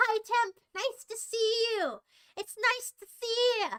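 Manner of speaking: high-pitched yelling at full tilt. Greeting someone on a stream, yelling. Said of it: "I'm yelling".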